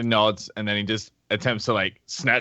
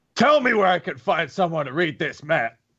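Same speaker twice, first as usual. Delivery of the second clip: a little aggressive, raised, pitched-up voice; 7 semitones higher than usual. Retelling what a man said in a bar: retelling an aggressive raised voice. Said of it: "raises his voice a little bit aggressive".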